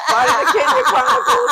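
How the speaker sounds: laughing it out.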